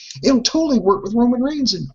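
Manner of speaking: high, falsely sincere sarcasm faking total belief. Retelling what they said about pushing Roman Reigns: sarcastically retelling a quote. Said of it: "Notice how I'm using sarcasm here".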